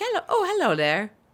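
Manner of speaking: put-on very high, woodsy transatlantic accent. Imitating the man from a cabin-in-the-woods show with a dog, in a transatlantic accent. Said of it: "it's transatlantic you're trying to do".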